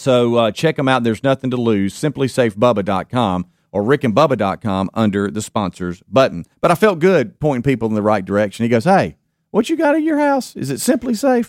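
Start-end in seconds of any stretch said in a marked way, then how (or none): 8.8-11.5 put-on high-pitched voice, much higher. Host retells what a man asked him, copying how he talks: imitating a high-pitched voice. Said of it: "does he talk like that?".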